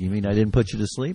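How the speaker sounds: ordinary talk, nothing marked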